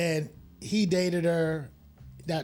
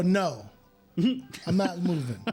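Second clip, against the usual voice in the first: very slow, swooping, defiant hard-man voice. Retelling refusing to move away from a locker, imitating acting like a tough guy. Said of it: "I'm trying to be a big tough guy".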